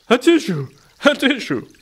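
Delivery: very high, loud words sneezed out. Narrator reads Shona's sheep's line, sneezing the words. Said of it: "sneezed Shona's sheep again".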